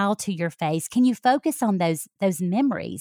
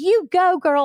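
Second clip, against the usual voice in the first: high, loud, delighted cheer through laughter; 9 semitones higher, 5 dB louder than usual. Describing mom at her daughters' dance routine: imitating mom cheering and laughing. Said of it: "she's cheering and she's laughing".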